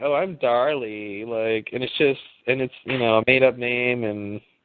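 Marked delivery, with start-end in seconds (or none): 0.0-1.2 affected, annoying, pretentious, self-satisfied tone. Mocking how someone with the name Darley would talk: imitating a pretentious person. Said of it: "seems very pretentious and very annoying".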